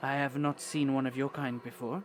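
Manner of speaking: anxious, nervous character voice. Voicing a nervous dragonborn woman meeting a stranger: anxious character voice. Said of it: "looks very anxious at you, and she says".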